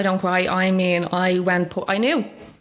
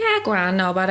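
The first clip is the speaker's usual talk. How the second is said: ordinary delivery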